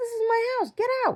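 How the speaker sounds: shrill, very high screaming. Retelling a dream, screaming at people in the house: retelling a scream. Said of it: "That's what I'm screaming at all these people".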